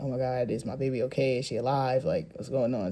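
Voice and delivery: acted-out panicked worry. Retelling not hearing the baby cry after delivery: retelling own panic. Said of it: "So I'm over there panicking".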